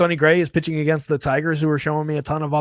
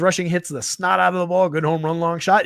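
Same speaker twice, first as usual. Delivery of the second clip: ordinary talk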